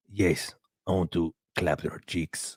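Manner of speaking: very slow, drawn-out put-on Spanish accent.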